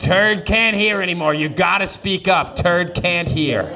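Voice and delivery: imitated loud calling. Retelling a grandmother telling the family to speak up: imitating grandma speaking loudly. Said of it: "And then normal volume".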